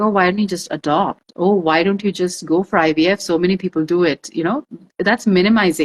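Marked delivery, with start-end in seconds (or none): none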